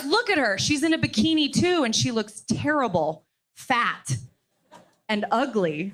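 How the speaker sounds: plain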